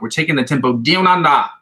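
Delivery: terrible fake Australian accent. Explaining the tempo of scale practice, terrible Australian accent. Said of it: "which is a terrible Australian accent".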